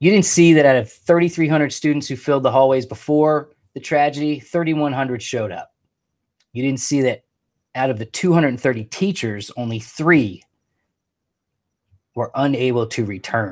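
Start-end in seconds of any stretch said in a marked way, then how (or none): 6.5-13.5 emotional, choked up, words catching, voice breaking. Speaking tonight about what someone wrote after a tragedy: choked up. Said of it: "I am getting choked up".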